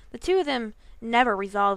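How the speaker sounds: ordinary delivery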